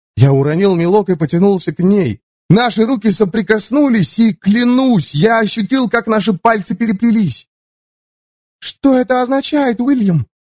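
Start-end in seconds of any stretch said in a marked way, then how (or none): 8.5-10.2 pitched-up tone with a faint trace of fear. In a read story, a woman pulls back her hand and asks the narrator, with a hint of fear. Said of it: "спросила она с оттенком страха в голосе".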